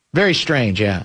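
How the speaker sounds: ordinary talk, nothing marked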